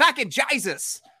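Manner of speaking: Australian accent. Describing narrating in accents, saying a favourite phrase in an australian accent. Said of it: "my favorite thing to say in Australian accent".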